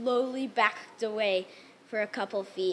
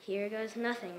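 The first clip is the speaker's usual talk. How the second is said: muttered under breath, much quieter; 7 dB quieter than usual. Batter with two strikes, taunted by a friend, mutters under breath. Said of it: "I muttered under my breath".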